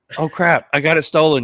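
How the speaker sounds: mock excited tone. Retelling a car theft as a hypothetical caller: mock excited. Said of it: "you're all excited".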